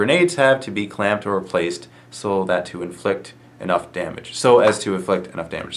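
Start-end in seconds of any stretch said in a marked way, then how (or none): none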